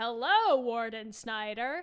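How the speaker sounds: put-on loud delivery. Retelling a film scene where a reporter greets the warden: imitating someone saying loudly. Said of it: "says his name super loudly".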